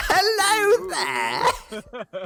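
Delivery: very high, animated, swooping put-on British accent. Voicing a character after being asked to: put-on British accent. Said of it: "why do I always go back to British?".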